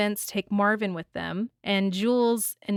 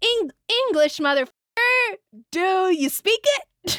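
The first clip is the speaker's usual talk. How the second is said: very high voice, fully in character; 11 semitones higher, 4 dB louder than usual. Giving a best attempt at quoting him, Jules impression. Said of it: "This is me doing my best uh, Jules in- impression".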